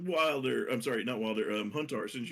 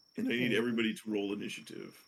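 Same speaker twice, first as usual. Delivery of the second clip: normal talking voice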